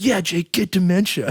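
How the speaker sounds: put-on loud outburst. Retelling a student's remark to a tutor in front of others: imitating a loud blurt. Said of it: "loudly in front of, like, six other people".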